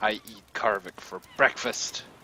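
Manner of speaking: growled, growling delivery. A game narrator voices an axe-wielding foe answering the player, growling. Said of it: "He growls back at you and he says".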